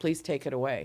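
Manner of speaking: acted tearful, crying delivery. Retelling a prayer begged while crying in a hospital bed: retelling a tearful plea. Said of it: "I begged him in that bed that night, crying".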